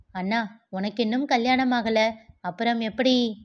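ordinary delivery

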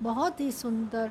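ordinary delivery

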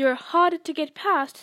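plain

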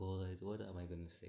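ordinary talk, nothing marked

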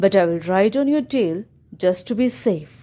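ordinary delivery

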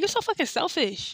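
play-acted angry snapping. Quoting your past self in an argument in a car, retelling snapping at her. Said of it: "I snapped at her".

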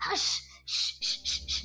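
hushed whisper. The other thieves hush a thief who yelled after cutting his nose; whispering. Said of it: "whispered the others".

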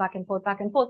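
ordinary talk

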